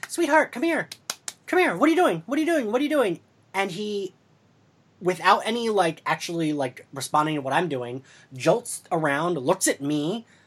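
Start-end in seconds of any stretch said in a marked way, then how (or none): 0.1-3.2 imitated coaxing tone, pitched higher. Retelling calling to him from a doorway: imitating calling a puppy. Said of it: "I start calling him like he's a puppy".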